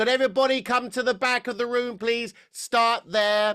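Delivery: projecting, very high-pitched voice with a nasal edge. Demonstrating voice use, calling everyone to the back of the room, projecting to the back of the room. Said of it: "I'm going to project".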